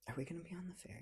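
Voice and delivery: soft, unvoiced whisper.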